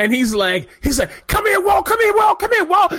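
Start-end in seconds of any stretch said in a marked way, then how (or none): 1.3-2.9 put-on wild, very high-pitched drunken yelling. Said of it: "yelling the whole time like a psychopath".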